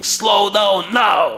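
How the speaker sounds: shrill, loud shout, very high-pitched. Retelling the inner voice at a green light; retelling a shouting voice. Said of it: "this voice started shouting".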